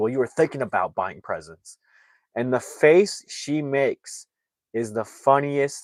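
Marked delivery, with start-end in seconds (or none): 0.0-1.8 quick, sharp, cutting, snapped retort. Retelling a movie scene, a man answering the girl: imitating someone snapping back. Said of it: "the guy snaps back and says".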